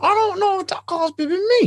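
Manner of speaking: very high, yelled, panicky voice.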